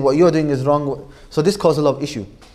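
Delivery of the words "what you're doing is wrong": usual speaking voice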